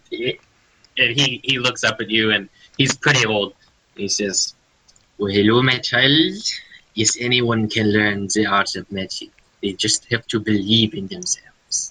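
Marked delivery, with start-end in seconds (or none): 5.1-11.9 put-on friendly, kindly French accent. Voicing a character who answers the players, friendly French accent. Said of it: "I'm so used to hearing the French accent".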